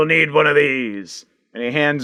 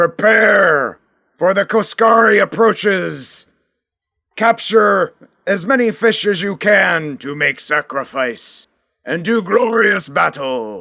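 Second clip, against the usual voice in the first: herald-style announcer call, pitched high; 5 semitones higher than usual. Narrating the scene, voicing the Klingon's announcement from the tower: Klingon announcing. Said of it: "the Klingon announces".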